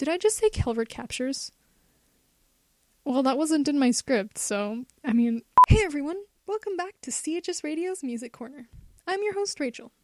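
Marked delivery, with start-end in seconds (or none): 5.0-9.8 amused, slightly strange host voice, odd delivery. A radio host opens the music segment, sounding amused and a bit strange. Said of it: "I sound very amused and kind of strange".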